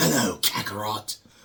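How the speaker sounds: high, hissing delivery. Contrasting with the earlier Vegeta voice: hissing Vegeta impression. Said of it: "instead of".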